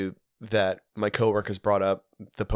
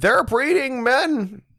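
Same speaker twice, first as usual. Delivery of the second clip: stupid-sounding put-on voice, higher and louder; 6 dB louder than usual. Acting out Jordan Peterson walking out and speaking: Jordan Peterson impression. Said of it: "I'm doing a pretty fucking stupid voice".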